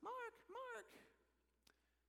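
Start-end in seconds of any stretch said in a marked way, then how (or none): 0.0-0.9 put-on very high little old lady voice. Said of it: "this little voice".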